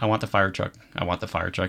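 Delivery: ordinary delivery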